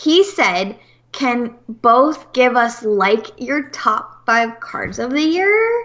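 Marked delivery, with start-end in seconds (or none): 1.1-5.9 put-on drawn-out Valley Girl way of talking. Reading a chat question aloud from a viewer: valley girl voice. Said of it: "It sounded like a Valley Girl".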